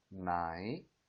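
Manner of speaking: nai dips low, then climbs back up. Explaining the question-mark tone: dip-rise tone on nai. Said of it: "내려갔다가 다시 올라가는 성조예요".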